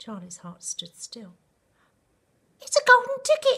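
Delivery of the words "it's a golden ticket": shrill, very high, very loud screaming cry. A shopkeeper leaping about cries out to a boy; screamed. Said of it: "screamed the shopkeeper".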